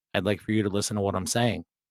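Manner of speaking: low, soft, calm deadpan. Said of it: "and I calmly said".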